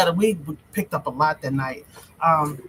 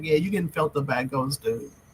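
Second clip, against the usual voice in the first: ordinary talk, nothing marked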